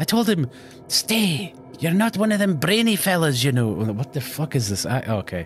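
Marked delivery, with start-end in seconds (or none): 0.0-3.7 put-on high, piping old chicken lady leprechaun voice. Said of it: "chicken lady leprechaun".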